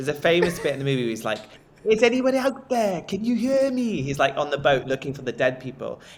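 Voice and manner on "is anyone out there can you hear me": put-on very high, slow, drawn-out Welsh accent. Finishing a Titanic story for listeners, quoting a famous bit from the movie; Welsh accent. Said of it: "that's a Welsh accent".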